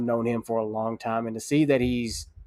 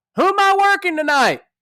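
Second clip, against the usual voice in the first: very loud, very high calling yell; 10 dB louder than usual. Retelling a man yelling across a locker room: imitating someone yelling. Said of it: "he just yells out across the room".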